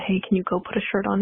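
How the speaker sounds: ordinary talk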